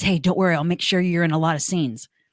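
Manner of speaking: whispering. Retelling what a scene partner said at the tip-off: imitating a whisper. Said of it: "he whispers to me".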